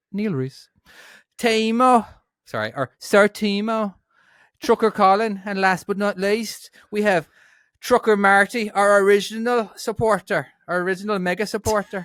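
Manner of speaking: put-on Dublin accent. Reading out supporters' names, in a dublin accent. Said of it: "let's try a Dublin accent".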